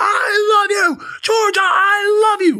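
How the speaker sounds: very slow, very high-pitched, drawn-out hollering yell. Describing yelling it from the school fence, re-enacting own loud yell. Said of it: "I would yell it from the fucking fence".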